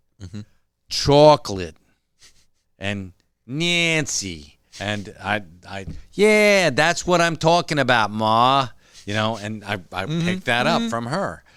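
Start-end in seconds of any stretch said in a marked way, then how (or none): 0.9-8.7 put-on loud, slow Brooklyn accent, teacher voice. Describing a teacher she had from Brooklyn, the speaker imitates her Brooklyn teacher's accent. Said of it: "I had a teacher who was from Brooklyn".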